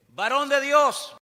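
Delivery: snide, cheeky tone. Retelling a captain addressing a prophet before the king, in a put-on snide tone. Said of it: "no le gustó mucho el tonito".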